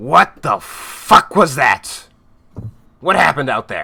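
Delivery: very loud rough gruff growling roar. Narrating a scene, voicing a figure heard through the crowd: gruff growling voice. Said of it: "gruff, growling voice".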